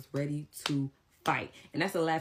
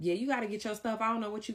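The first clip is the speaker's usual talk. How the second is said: raised, pitched-up, heated voice; 7 semitones higher than usual. Recounting a confrontation with a cousin, retelling own raised voice. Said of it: "my voice is raised".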